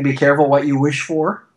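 normal talking voice

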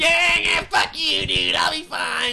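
put-on loud, very high drunken brush-off. Retelling what a drunk friend said when told to be careful: imitating drunk Taz. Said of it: "he gave me the typical Taz, like".

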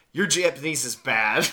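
ordinary talk

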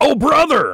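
excited, high-pitched exclamation. Suggesting how a texter said a line: excited Hulk Hogan voice. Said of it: "Like, excited, Hulk Hogan".

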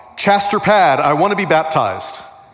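put-on child's voice shouting at the top of lungs. Retelling how a kid in church shouted to the pastor: imitating a kid shouting. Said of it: "he shouted out at the top of his lungs".

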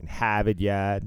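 thick Boston accent with r's dropped. Recalling playing Ultimate Frisbee after school, switching to a Boston accent. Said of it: "yes, I am from Boston".

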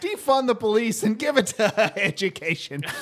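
said through a laugh. Comedy podcast host making a point about teachers, said with a laugh. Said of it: "I'm going to say it with a laugh".

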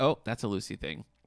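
ordinary delivery

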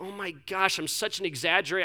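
normal talking voice

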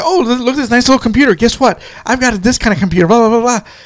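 rapid, rattled-off fast chatter. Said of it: "she starts talking real fast".

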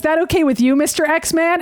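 ordinary delivery

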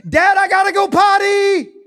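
very high, shrill, very loud, drawn-out scream. Dad retelling how Jamie stood up on her potty and called him; retelling a scream. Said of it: "she stands up on the potty and she screams".

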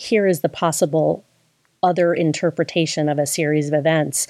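plain

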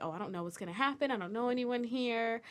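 ordinary delivery

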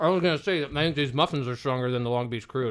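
speaking with mouth full, chewing. Podcast host talking while eating muffins, talking with mouth full. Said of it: "You can't talk with your mouth full".

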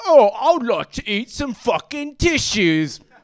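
loud, high tough-guy voice. Acting out the vacuum cleaner's reply when asked what it wants, in a Jason Statham voice. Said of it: "He sounded a lot like Jason Statham".

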